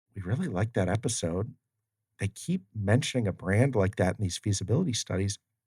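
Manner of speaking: ordinary talk, nothing marked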